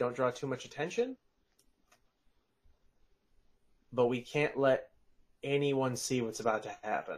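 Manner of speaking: character voice, whispered. The game master voices Leosin warning the group, Leosin whispering. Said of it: "Leosin just sort of whispers".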